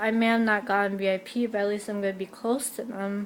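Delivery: ordinary delivery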